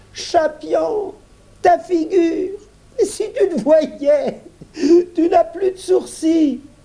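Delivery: very high, drawn-out exclamation full of laughter. Reading a story, a girl laughing at her brother's face exclaims: laughing exclamation. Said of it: "éclata de rire".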